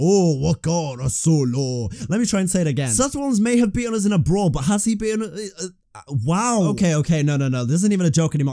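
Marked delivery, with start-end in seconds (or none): 0.0-1.9 put-on alien creature voice. Mocking own garbled attempt at a sentence: Jabba the Hutt voice. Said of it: "Out here sounding like Jabba the Hutt".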